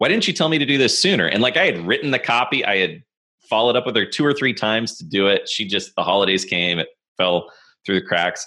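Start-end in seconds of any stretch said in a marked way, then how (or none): 0.0-1.3 acted-out jokey, teasing, pitched-up delivery. Retelling a long-term client's remark after a delayed project, retelling a joking question. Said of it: "she jokingly said".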